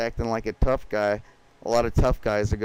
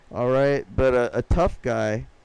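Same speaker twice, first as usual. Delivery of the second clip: usual speaking voice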